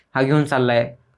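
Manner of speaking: ordinary talk, nothing marked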